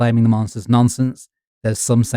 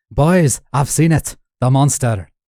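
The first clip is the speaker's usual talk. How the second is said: bad, hammy, fake put-on Scottish accent; 2 semitones higher than usual. Retelling a man's announcement to pub locals; bad fake Scottish accent. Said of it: "put on the bad fake Scottish accent".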